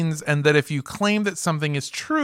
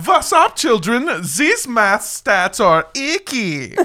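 high, educational kids' cartoon character voice; 6 semitones higher than usual. Riffing on a professor's name, the speaker does a kids' math cartoon character voice. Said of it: "sounding like a cartoon character designed to make math fun".

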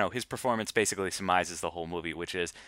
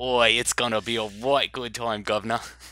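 put-on East London Cockney accent. Hosts open an episode done entirely in Cockney accents; Cockney accent. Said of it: "we're going to do the entire episode in Cockney accents".

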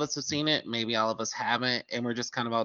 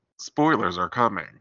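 loud, put-on announcer-style voice; 4 semitones lower, 5 dB louder than usual. Joking about warning listeners of spoilers: put-on announcer-style voice. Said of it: "I may use this voice".

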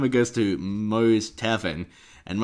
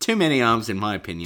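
plain

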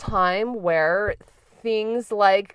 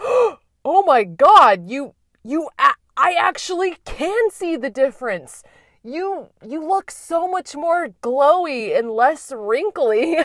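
mock gasping exclamation, much higher; 6 semitones higher, 4 dB louder than usual. Quoting a man reacting to how different the speaker looks, retelling a gasp. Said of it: "he gasped and he was like".

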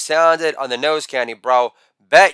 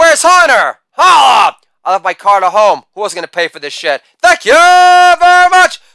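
loud, high-pitched hollering, very drawn out; 8 semitones higher, 7 dB louder than usual. Retelling own past words at a bar's last call: imitating yelling. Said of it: "While yelling".

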